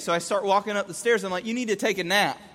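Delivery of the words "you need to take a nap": normal talking voice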